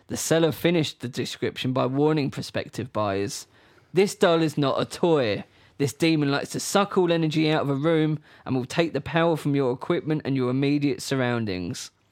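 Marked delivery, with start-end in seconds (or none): none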